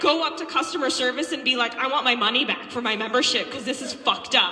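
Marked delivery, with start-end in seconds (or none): none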